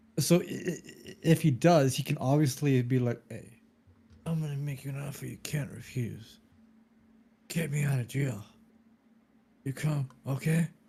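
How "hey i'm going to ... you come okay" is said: soft, hushed, soft-spoken mob-boss voice. Discussing whether a man has leverage in Italian politics, the speaker does a Marlon Brando voice. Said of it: "Why am I doing Marlon Brando's voice?".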